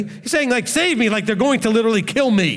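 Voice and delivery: ordinary talk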